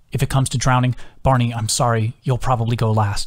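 plain

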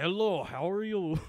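tentative, slow, attempted Russian accent. Retelling how a woman greeted the speaker on arrival: attempted Russian accent. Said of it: "I'm trying to see if I can do a Russian voice".

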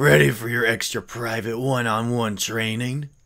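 bad put-on rough warrior voice. Reading a game character's lines, attempting an atrocious Jasper voice. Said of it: "Jasper's voice".

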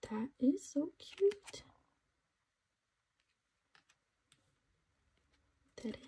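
voiceless whisper. Unboxing photo cards and finding a cute set: whispering. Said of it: "Sorry, that was a whisper".

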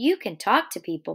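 plain

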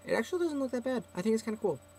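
rushed, very high-pitched, fast chattering talk. Showing Denlin the cover, talking fast. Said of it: "I'm talking fast".

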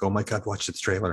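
usual speaking voice

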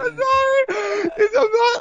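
speaking through a laughing fit. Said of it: "I am not laughing because it was bad".

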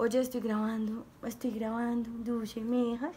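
low, quiet, hushed aside.

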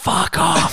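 hushed, secretive whisper under the breath. Acting out him whispering to the mother after leaving the stage: imitating a whisper. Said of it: "whispers to the mother".

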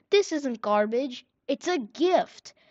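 abrupt, sudden, high and loud exclamation. A voice behind the gate calls after the boys riding away, sudden exclamation. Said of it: "the voice suddenly exclaim".

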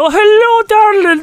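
very high-pitched woman's voice. Giving a clue to your partner in a timed guessing game, do a Mrs. Doubtfire voice. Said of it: "playing the woman".

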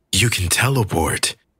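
plain reading voice

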